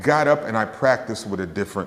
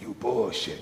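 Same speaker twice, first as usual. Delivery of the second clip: rough, gravel-filled rasp in a put-on voice; 7 dB quieter than usual. Retelling what a master musician said after a show: imitating a gravelly voice. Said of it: "He had this really gravelly voice".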